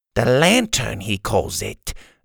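plain

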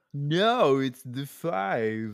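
put-on California surfer-dude accent. Insisting the road is called the 5, the speaker puts on a california accent. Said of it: "every episode someone has to do that voice".

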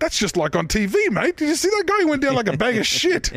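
put-on smug gloating.

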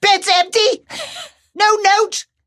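shrill, high-pitched shriek. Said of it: "In their best Julia Walters voice".

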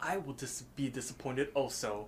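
hushed, threatening, half-whispered voice. Retelling a scene where Death threatens the others: imitating Death half-whispering. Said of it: "Death kinda whispers to them".

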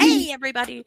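very enthusiastic. Greeting the listeners again, really enthusiastic greeting. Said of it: "Really enthusiastic".

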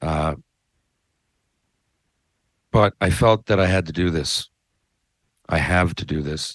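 choked-up, emotional voice. Explaining to viewers why they won't talk about anything else: emotional. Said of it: "I apologize for getting emotional".

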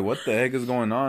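ordinary talk

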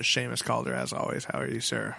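unexcited, flat. Introducing a co-host and asking how he is: unenthused. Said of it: "You sound so unenthused on that".

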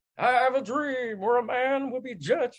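pitched way up, sermon-style preaching voice. Quoting a speech that conservatives preach on TV: Martin Luther King voice. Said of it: "I'm doing a Martin Luther King voice".

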